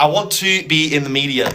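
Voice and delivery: ordinary talk, nothing marked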